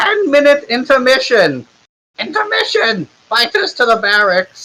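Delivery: tiny, very high-pitched, little-voiced yell. Voicing the milkman announcing through his horn: shouting in a little voice. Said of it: "he shouts into it so everybody can hear him in his little voice".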